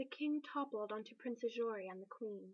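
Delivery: ordinary delivery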